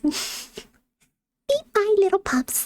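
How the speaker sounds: tiny, cute, high puppy voice. Showing off blind-box toys, the speaker switches into a little pup voice. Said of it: "I'm gonna go little pup voice".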